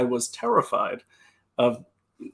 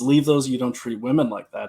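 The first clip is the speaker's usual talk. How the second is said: usual speaking voice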